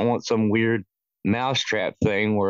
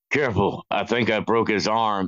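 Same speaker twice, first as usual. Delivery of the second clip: mock-serious delivery through gritted teeth. Retelling a movie cop's line to his partner: imitating a serious, gritted-teeth delivery. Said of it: "very serious, serious, gritting his teeth".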